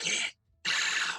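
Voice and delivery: put-on witchy voice. Acting out a voice that suddenly kicks in while touring a house: witchy voice. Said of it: "that fucking witchy voice kicks in".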